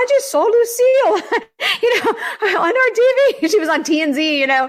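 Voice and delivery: put-on excited Australian accent. Retelling what a friend said after seeing the speaker on TV, imitating Doreen's Australian accent. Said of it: "in her Australian accent".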